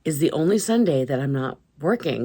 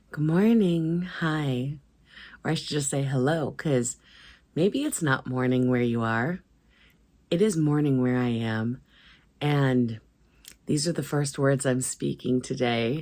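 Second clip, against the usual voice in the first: very tired, exhausted voice. Greeting viewers with the first words spoken that day: very tired voice. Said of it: "So I sound very tired".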